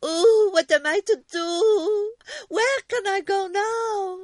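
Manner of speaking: very high, drawn-out crying in fright. Shouted at by earwigs, she runs back, frightened crying.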